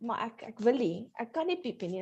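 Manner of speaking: plain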